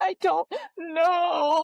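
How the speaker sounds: play-acted crying through sobs, high and tearful. Retelling how a crying college friend answered in the bathroom: imitating someone sobbing. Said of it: "Through sobbing tears".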